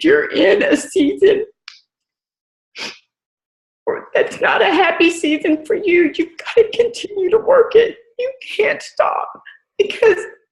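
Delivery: high, tearful, breaking voice. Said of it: "I'm gonna start crying".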